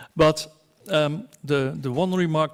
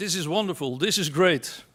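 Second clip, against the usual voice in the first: ordinary delivery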